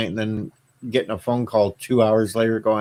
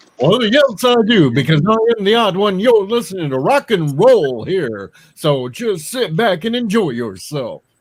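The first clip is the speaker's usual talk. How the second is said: put-on rock radio DJ voice, on-air announcer delivery; 9 semitones higher, 4 dB louder than usual. A guest shows the hosts the separate voice he uses on the radio, radio DJ voice. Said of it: "I have a whole separate voice when I do the radio".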